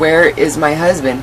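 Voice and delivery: ordinary talk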